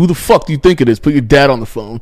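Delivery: acted menacing, threatening voice. Retelling what a caller said on the phone, imitating a threatening caller. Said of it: "caller threatening on phone, performed".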